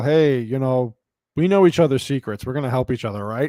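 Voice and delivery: play-acted smug, knowing, pleased-with-himself tone. Retelling a show scene where a lover speaks to a knight: imitating a smug tone.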